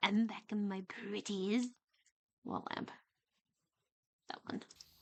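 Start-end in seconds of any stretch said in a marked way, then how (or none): 0.0-1.7 most wicked, sinister, evil villain voice. Reading a line aloud for fun, in the most evil villain voice. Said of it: "reading it with like the most evil villain voice".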